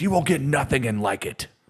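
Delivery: very high, changed-up, altered voice. Retelling a Caddyshack scene at the concession stand, the speaker does Judge Smails' voice. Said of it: "in a little different voice".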